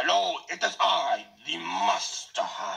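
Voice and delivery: creaky, very slow, dragged-out pretend voice. Voicing Wario in disguise, greeting Waluigi: Wario pretending to be Master Hand. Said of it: "I feel like Wario's pretending to be Master Hand".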